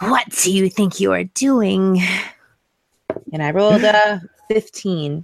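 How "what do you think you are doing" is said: threatening, in-your-face, intimidating and menacing tone. A tabletop player's character jumps out of the shadows at a man, intimidating. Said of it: "speak with him using intimidation".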